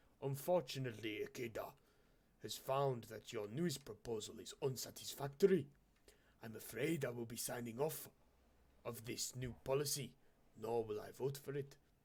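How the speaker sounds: put-on Japanese accent. Reading a caller's lines in a story: imitating a Japanese accent. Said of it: "You like my Japanese impression?".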